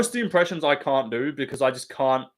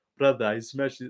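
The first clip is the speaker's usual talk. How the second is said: poor imitation Russian accent; 4 dB quieter than usual. Mocking how a friend does a Dagestani fighter impression. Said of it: "ask Guru to do a Dagestani fighter impression".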